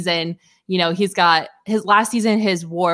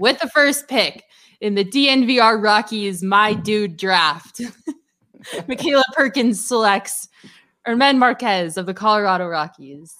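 slow, deliberate announcing, word by word; 3 semitones higher than usual. Announcing a draft pick as Rob Manfred: Rob Manfred impersonation. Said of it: "Let me do my best Rob Manfred impersonation".

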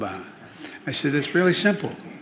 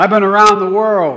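all-out, high, very loud yelling; 6 semitones higher, 11 dB louder than usual.

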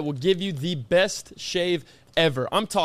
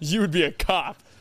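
mock serious delivery. Retelling the other speaker's line to tease him: imitating someone saying it seriously. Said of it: "He said that so serious. You went".

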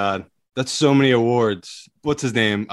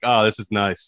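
ordinary delivery

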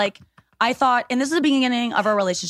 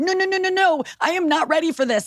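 mock frightened, high, scared pleading; 7 semitones higher than usual. Retelling own words when scared: imitating own scared pleading. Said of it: "when I got scared".

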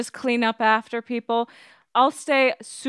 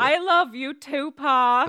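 shouting affectionately, higher pitch; 3 semitones higher than usual. Playing a daughter declaring love to her father figure: yelling declarations of love. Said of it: "start yelling at each other about how much you love".

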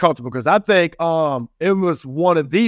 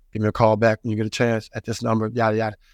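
very low, flat, nonchalant monotone; 7 semitones lower, 4 dB quieter than usual. Retelling a voicemail from Clark Hunt, in his nonchalant, very monotone voice. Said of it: "this nonchalant, very monotone voice".

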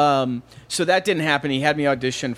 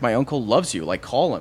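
plain

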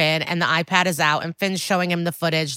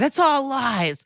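high, sudden, acted-out screamed outburst; 7 semitones higher than usual. Retelling a tv scene where a character gets up and screams. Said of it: "pushes his chair and screams".

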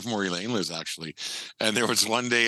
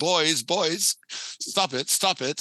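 put-on British accent, higher pitch; 7 semitones higher than usual. Retelling a man calling to his kids in a grocery store: British accent. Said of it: "in his British accent".

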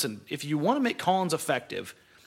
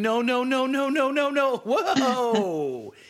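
acted, very slow, high, stretched-out yelling; 9 semitones higher, 4 dB louder than usual. Retelling watching a player shoot threes on tv, retelling yelling at the tv. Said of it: "I yelled at the TV screen".

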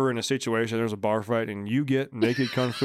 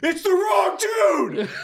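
put-on yell, much higher, louder; 4 dB louder than usual. Retelling a fight, the speaker quotes his fraternity brother grabbing his arm, retelling a yell. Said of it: "he's yelling at me".

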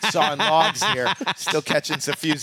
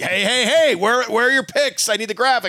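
put-on strict yelling, higher and louder; 7 semitones higher, 4 dB louder than usual. Retelling emails from a strict organizer: imitating Meatballs yelling. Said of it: "one of the guys he's yelling at".

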